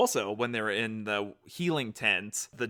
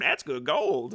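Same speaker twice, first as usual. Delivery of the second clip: high, small, scrawny pirate character voice; 5 semitones higher than usual. Pointing out a pirate character in the show: imitating the scrawny little pirate. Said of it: "he voices the scrawny little pirate".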